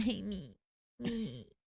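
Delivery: put-on whiny tantrum, like a toddler. Retelling the other speaker being tired in the car: imitating a toddler tantrum. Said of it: "more like a toddler tantrum".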